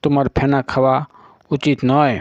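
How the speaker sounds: ordinary delivery, nothing marked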